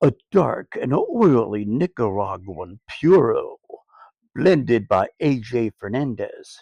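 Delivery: on-air radio announcer voice. Reviewing a cigar, reading its blurb aloud in his radio voice. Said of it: "Gotta get my radio voice on".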